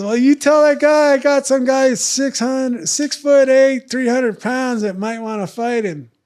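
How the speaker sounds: high, loud, whiny little voice. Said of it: "Art's got this whiny little voice".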